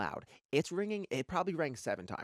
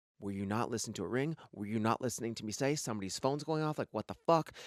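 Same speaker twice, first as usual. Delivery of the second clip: usual speaking voice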